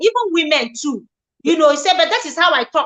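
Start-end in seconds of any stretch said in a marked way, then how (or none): none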